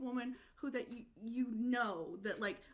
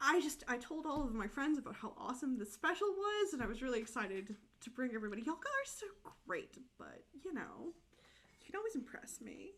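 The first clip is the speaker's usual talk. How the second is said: ordinary talk, nothing marked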